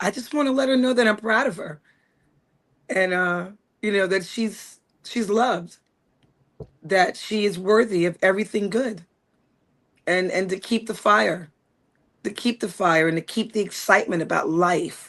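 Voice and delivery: getting choked up. Asked what she'd tell her younger self, a coach answers, choked up. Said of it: "that question always chokes me up".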